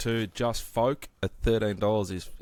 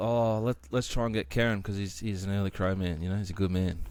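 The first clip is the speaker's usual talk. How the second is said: normal talking voice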